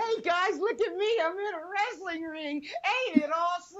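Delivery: put-on thrilled child voice. Mocking a wrestler's entrance into the ring: mocking imitation of an excited kid. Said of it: "like a Make-A-Wish kid whose dream came true".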